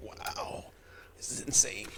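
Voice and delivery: hushed, awed whisper.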